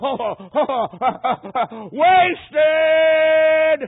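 very high, shrill, very loud scream. Retelling a dying man crying out toward heaven: imitating a scream. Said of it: "he just screamed out".

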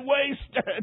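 single word cried through sobs. Retelling a dying man falling back in tears: imitating sobbing speech. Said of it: "Then he sobbed and said".

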